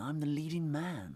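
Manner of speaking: soft, smooth leading-man voice.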